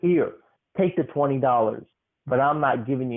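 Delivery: mock, extremely aggressive, hostile delivery. Reminding the listener what he said when handing over the money, in mock-aggressive tone. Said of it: "you said it in the most aggressive tone".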